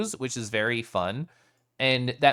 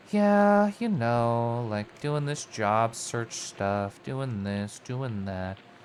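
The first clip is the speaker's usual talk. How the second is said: mock level, unexcited, unenthused tone; 3 semitones lower than usual. Retelling a voice message sent to a friend, retelling a not-excited voice. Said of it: "in a not excited voice".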